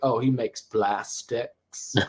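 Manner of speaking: put-on deep Southern accent. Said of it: "like a deep South type of accent".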